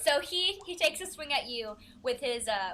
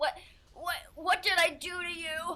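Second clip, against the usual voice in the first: feeble, high, weak pleading of a dying goblin; 6 semitones higher than usual. Voicing a goblin who is puking up blood and barely holding on: dying goblin pleading. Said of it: "And he's, like, puking up blood. He's like".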